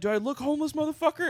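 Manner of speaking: shrill, very high-pitched screaming. Retelling a confrontation with a regular at a car window: imitating someone screaming. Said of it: "he's just fucking screaming".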